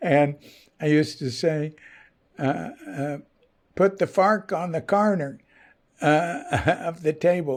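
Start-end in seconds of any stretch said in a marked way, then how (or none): 3.8-7.6 Texan way of talking. Someone from Fort Worth showing how he used to say things, in a Texas accent. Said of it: "That's a Texas accent".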